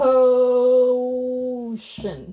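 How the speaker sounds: loud, slow, exaggerated, drawn-out "potion". Showing how to pronounce the -tion ending, slow, drawn-out potion. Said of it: "I'm just trying to dramatize it, to slow it down".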